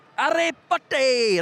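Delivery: very high, loud, jeering, taunting yell. Retelling what older pupils used to shout at school: imitating older pupils shouting. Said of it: "That's what they used to say to me".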